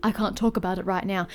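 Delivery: normal talking voice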